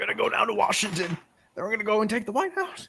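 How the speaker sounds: toned-down put-on rally shout. Doing an impression, not at full volume so the mic survives: Howard Dean impression. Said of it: "I didn't wanna go a hundred percent on it".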